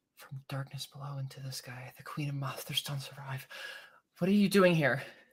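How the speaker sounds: spoken very quietly under the breath. Narrating Diantha speaking so only Corinna may hear, under her breath. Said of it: "under her breath so no one else can hear".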